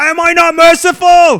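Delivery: very high, loud, belted cry, every word drawn out. Acting out a film scene after a friend says like this: imitating Commodus. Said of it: "Like this".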